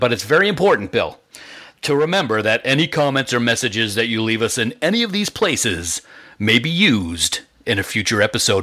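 swooping, dramatic blockbuster movie-trailer narrator voice. Reading out a reminder about listener comments: movie trailer voice like Don LaFontaine. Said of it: "That almost sounded like movie trailer guy, like Don LaFontaine".

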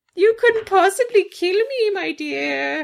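very high, wicked storybook witch voice. Retelling a villain's taunt to a warrior: wicked witch voice. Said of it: "he's turning into a wicked witch".

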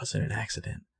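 barely voiced, hushed, very soft breathy whisper. Retelling a scene where a character answers quietly: imitating a whisper. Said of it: "And Ari's kinda whispering".

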